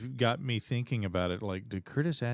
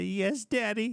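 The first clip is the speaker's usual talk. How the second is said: imitated frightened child voice, higher; 11 semitones higher than usual. Acting out a child who shudders in fear: imitating a frightened child. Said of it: "they shudder in fear".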